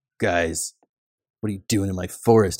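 smug, pretentious woodsy bro voice. Voicing a druid who drops from the trees: pretentious woodsy bro voice. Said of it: "pretentiously, like, woodsy bro".

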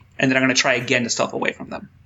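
ordinary talk

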